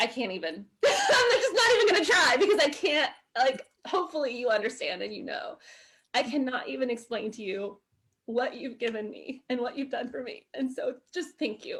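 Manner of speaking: happy, tearful voice, crying. Thanking listeners for all they've given, crying happy tears. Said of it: "And these are happy tears".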